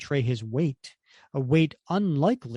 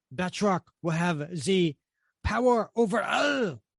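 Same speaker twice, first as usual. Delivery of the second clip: put-on thick French accent, higher pitch; 5 semitones higher than usual. Reading a comic aloud as the villain: Batroc the Leaper voice. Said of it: "And that's Batroc the Leaper, for those of you who don't speak French".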